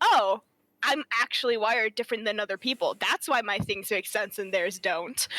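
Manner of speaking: ordinary delivery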